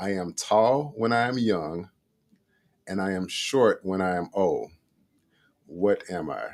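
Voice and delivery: very slow, drawn-out, careful, deliberate reading. Reading a brain teaser aloud for listeners, very, very slow. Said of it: "I'm gonna read it very, very slow".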